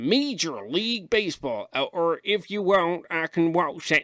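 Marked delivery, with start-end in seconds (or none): 0.0-1.7 put-on American accent, voice pitched differently. Demonstrating how to say a sports league name in an American accent. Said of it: "you pick different pitches of your voice to American accents".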